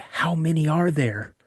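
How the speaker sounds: whispered speech. Retelling asking a father a question at night: retelling own whisper. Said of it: "so I kinda whisper".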